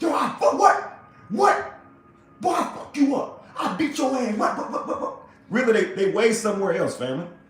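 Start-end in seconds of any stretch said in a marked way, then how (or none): 0.0-5.2 play-acted, aggressive, threatening, high-pitched yell. Imitating someone who yells threats at the phone: imitating someone yelling threats. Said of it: "yell at the phone".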